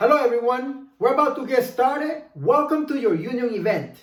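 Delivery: projected voice carried far, filling the room. Showing how to open an event, projecting loudly to fill the room. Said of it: "So this is the way you start".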